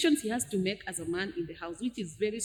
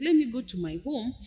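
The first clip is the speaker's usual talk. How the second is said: ordinary talk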